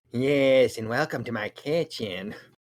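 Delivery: odd, unsettling put-on voice. Imitating a voice just heard online: David Lynch voice like Peter Lorre. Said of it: "kinda almost sounds like a Peter Lorre sort of thing".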